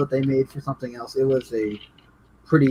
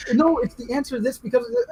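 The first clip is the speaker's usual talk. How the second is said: put-on, high-pitched yelling; 10 semitones higher than usual. Retelling how they answered questions at the screen: retelling own yelling at the screen. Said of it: "I was legit yelling at the screen".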